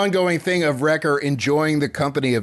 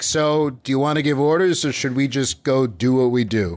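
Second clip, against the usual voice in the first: ordinary delivery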